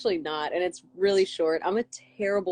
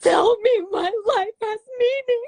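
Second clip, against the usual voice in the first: play-acted very high, loud, tearful sobbing speech; 6 dB louder than usual. Retelling a phone call answered while driving in Nashville, imitating Lindsay crying. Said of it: "her crying on the phone".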